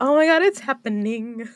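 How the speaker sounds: bubbling, high excited speech. Retelling own reaction while playing: imitating own excitement. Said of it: "I just get all excited".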